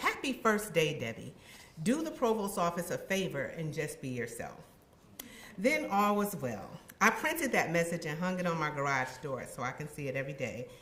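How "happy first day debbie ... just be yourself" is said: usual speaking voice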